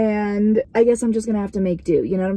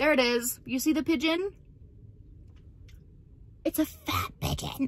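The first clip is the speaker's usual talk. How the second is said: talking with mouth full, higher, quieter; 4 semitones higher, 10 dB quieter than usual. Filming a fat pigeon for viewers, talking with mouth full. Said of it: "I have stuff in my mouth".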